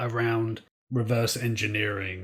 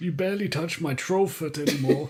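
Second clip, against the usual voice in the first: put-on higher-pitched elderly man voice; 6 semitones higher than usual. Voicing a troll character speaking to a partner: old man voice. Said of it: "I'm doing like a old man voice".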